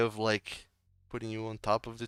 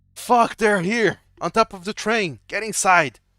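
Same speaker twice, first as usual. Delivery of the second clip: high-pitched, loud, alarmed shout; 6 semitones higher, 7 dB louder than usual. Voicing a man on a train who spots the party: shouting a warning. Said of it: "he just shouts out".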